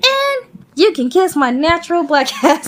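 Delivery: bad put-on voice, jumping up very high. Recapping a show, a character answers his bosses, bad Charlene impression. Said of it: "I'm doing the bad impression".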